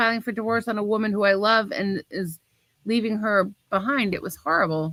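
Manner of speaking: plain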